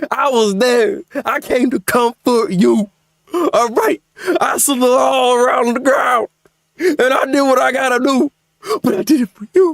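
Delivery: begging, pleading tone through put-on fake sobs. Reminding someone they go way back, a mock crying plea. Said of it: "how you're freaking crying".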